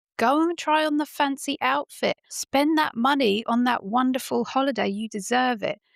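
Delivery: high, mock shout. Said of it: "Are you shouting at the screen".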